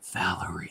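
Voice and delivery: soft, breathy, barely voiced whisper. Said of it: "could barely whisper".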